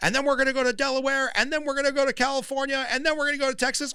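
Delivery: fired-up, pumped, very high, loud, belted. Retelling a candidate's primary-night speech: imitating Howard Dean's fired-up speech. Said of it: "when Howard Dean on that stage went".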